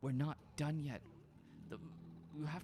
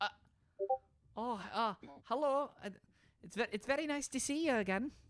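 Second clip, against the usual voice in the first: put-on higher, slightly louder Scottish accent; 8 semitones higher, 6 dB louder than usual. Voicing Caroline greeting the players while sneaking over: Caroline's Scottish accent. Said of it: "it's like a Scottish accent".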